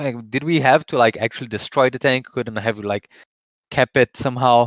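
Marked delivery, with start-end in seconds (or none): none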